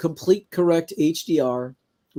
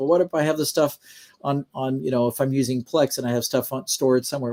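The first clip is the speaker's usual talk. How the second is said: plain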